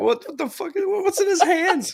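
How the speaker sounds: shocked, bewildered, stunned tone. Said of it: "I was like".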